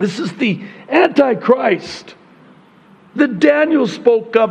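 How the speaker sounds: voice catching with emotion. Speaker explaining a prophecy about the Antichrist, choked up. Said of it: "I'm getting all choked up here".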